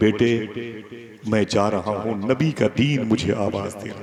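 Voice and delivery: ordinary talk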